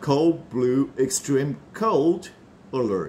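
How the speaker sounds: very slow "Cold Blue Extreme Cold Alert", sounds linked together. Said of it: "警戒".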